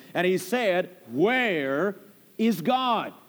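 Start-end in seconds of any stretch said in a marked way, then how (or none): 1.1-3.1 mock severe, stern preacher tone. Retelling a preacher repeating his question to a little boy, in a mock-stern tone. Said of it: "in even a sterner tone".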